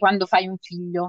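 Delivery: ordinary delivery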